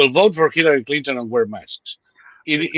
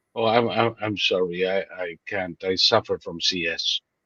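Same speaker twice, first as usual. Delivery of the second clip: put-on very low, soft, woeful, sorrowful stammering voice; 8 semitones lower, 7 dB quieter than usual. Retelling what he told store staff who asked him to wear a mask: putting on a sad apology. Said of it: "with my most sad face".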